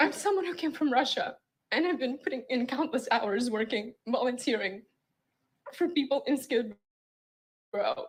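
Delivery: tearful speech, crying while talking. A guest on a radio show, urged to keep talking, is crying while talking. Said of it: "Just talk through the tears".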